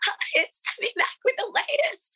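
put-on very high, voice-breaking pubescent teen squeak. Retelling going to work with no voice, imitating her own pubescent-sounding voice. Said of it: "sounded like I'd hit puberty".

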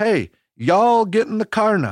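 very high, loud Southern Tennessee accent. Showing how tennessee grown-ups tell kids to get in the car, in a tennessee accent. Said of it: "But the Tennessee grown-ups say".

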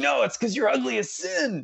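very high, raspy, rough screaming. Recalling dad watching a player's interview, imitating dad screaming at the tv. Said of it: "my dad was always like screaming at the TV".

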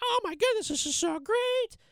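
very high-pitched put-on Nashville voice. Speaker mimicking Nashville hockey fans, put-on Nashville voice. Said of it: "I don't mean to do that voice".

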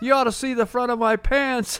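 high voice, laughing while talking. Retelling what the plane's captain said over the speaker: imitating the captain laughing while talking. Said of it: "he's sort of laughing".

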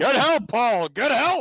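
play-acted hollering, loud and drawn out. Retelling how Lee Marshall yelled at Paul Orndorff: imitating Lee Marshall yelling. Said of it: "he's yelling at Paul".

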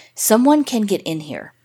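ordinary delivery

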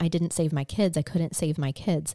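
ordinary delivery

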